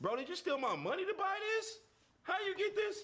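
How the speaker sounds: mock, very high and loud, fighting back tears. Acting out deflecting a son's Christmas gift: mock holding back tears. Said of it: "then your emotions hit where you about to cry a little bit".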